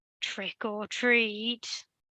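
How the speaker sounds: menacing, sinister, hushed half-whisper. Reading a horror story aloud, the narrator gives a dark figure's line as a sinister half-whisper. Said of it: "whispered in a sinister voice".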